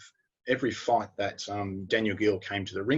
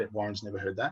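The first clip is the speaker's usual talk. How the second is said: ordinary delivery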